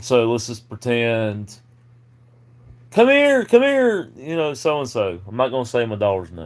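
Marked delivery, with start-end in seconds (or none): 2.9-4.1 screaming, pitched higher. Retelling how the wife called the daughter in: imitating someone screaming. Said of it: "she starts screaming".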